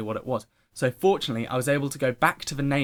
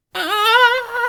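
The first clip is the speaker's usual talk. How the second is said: high, loud, panicked scream. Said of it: "I'm just like".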